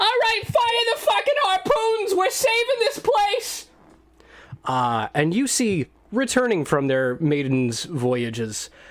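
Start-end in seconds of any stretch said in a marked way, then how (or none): 0.0-3.7 piping, squeaky, very high-pitched voice. Narrating a scene, a voice off in the distance calls out in a high-pitched voice. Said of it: "some high-pitched voice say".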